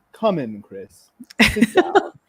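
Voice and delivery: grave, solemn, loud voice with swooping pitch. Retelling a voice teacher calling a student into his office: imitating a grave baritone teacher. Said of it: "with just this grave demeanor on his face".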